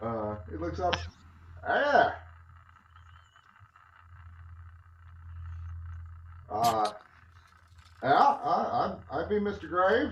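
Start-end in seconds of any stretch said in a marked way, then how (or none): 1.7-10.1 put-on old rustic country farmer voice. Narrator voices an old man who looks up and introduces himself, farmy voice. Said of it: "in a str- shockingly Peppered Farmy uh, voice".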